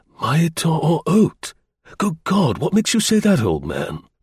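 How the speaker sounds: gasped words. The narrator reads the older officer's reply to the old man: gasping. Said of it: "The older officer gasped".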